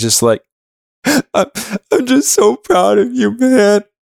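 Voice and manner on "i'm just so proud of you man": put-on sobbing, very high-pitched and very slow. Retelling what a friend said to them, imitating someone crying. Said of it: "And he's like crying".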